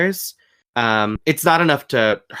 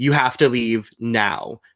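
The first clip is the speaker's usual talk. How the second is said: demon voice, much slower. Describing a planned scene, demonstrating a line in the demon's voice. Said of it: "it's gonna be the demon's voice".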